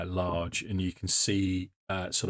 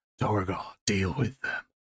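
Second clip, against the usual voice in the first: grainy, gravel-edged rasp. Game narrator voices someone inside the tent answering announced visitors: deep gravelly voice. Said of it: "a deeply deep gravelly voice say".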